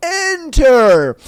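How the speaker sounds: booming voice yelling. Telling a joke, a voice yells at the man arriving at a casino, booming yell. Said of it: "a booming voice yells".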